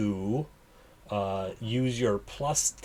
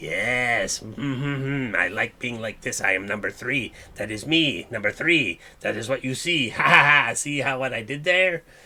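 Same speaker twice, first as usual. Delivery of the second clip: loud, odd put-on character voice, "yes" drawn out; 6 dB louder than usual. Voicing how a player's transformed character starts talking: put-on voice of the transformed character. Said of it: "you start talking like this".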